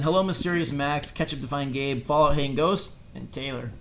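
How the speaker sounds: ordinary talk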